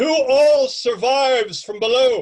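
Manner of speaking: loud, slow, high, grandiose captain voice. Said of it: "you hear this deep, grandiose voice".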